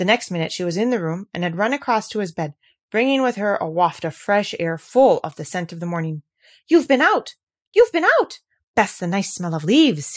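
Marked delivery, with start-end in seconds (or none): 6.7-8.4 lively, animated, high, loud, swooping cry. From his bed, he cries out as she runs in from outside. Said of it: "he cried".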